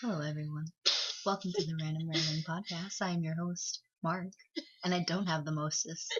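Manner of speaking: put-on silky bedroom voice. Mocking another speaker's intro: imitating a silky bedroom voice. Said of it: "he's trying to use a bedroom voice".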